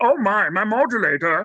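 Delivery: slow, deliberate cartoon space-alien voice. Offering to do every character, showing a Marvin the Martian voice. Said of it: "You want Marvin the Martian?".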